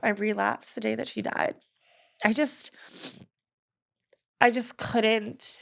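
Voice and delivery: crying while talking. Telling another speaker about relapsing the day her mom died, crying while talking. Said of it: "I'm crying because I have a lot of guilt".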